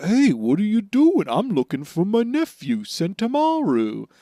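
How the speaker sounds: very slow, high drawl, every word stretched out. Retelling an anime scene, voicing Kizaru confronting two fleeing men, in a slow Kizaru voice. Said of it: "he talks very slow".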